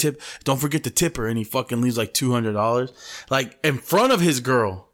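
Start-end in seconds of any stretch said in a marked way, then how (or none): 0.0-1.3 put-on frightened, anxious, scared voice. Retelling a movie scene where a man gets up: imitating a scared man. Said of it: "he gets up all scared".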